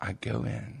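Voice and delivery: hushed half-whisper, under the breath. Starting to tell a story about a doctor visit: half-whispering. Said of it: "Are you whispering?".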